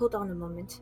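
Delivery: barely audible, hushed half-whisper. Answering a fellow player's half-whisper in character: half-whispering back. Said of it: "and I whisper back".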